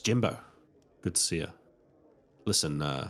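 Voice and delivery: voice dropped right down, low pitch. Retelling walking up to the desk to speak to Jimbo, in a low voice. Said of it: "Low voice".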